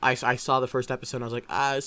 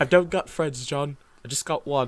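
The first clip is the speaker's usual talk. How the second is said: put-on British accent. Quoting a favorite Sherlock line to the other speaker: Sherlock Holmes British accent. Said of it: "That was the best British accent I've ever heard".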